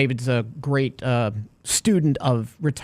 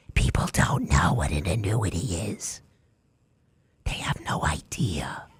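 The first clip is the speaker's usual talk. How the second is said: soft, hushed, half-whispered delivery; 8 semitones lower, 5 dB quieter than usual. Trying to see if you can do it while talking about annuities, whispering like AOC. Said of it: "Whisper like A O C".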